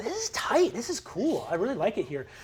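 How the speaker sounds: high, bubbly, sing-song, friendly undead charm. Voicing a ghost who has become friendly and bubbly: friendly, bubbly ghost voice. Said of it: "Zane has become so much more friendly and bubbly".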